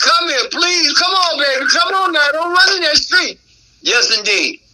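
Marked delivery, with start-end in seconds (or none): 0.0-3.4 mock pleading, higher. Acting out calling a dog back from a cornfield: acting out begging a dog. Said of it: "there is one time I will beg".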